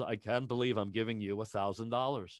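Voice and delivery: hushed, half-voiced stage whisper. Retelling words half-whispered in his ear while handing over a check: imitating a half-whisper. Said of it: "He whispers in my ear".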